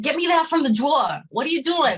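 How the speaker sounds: put-on heavy New Jersey, New York accent. Recalling how a man talked, imitating his thick new york accent. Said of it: "real thick, like, New Jersey, New York accent".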